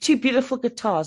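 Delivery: ordinary delivery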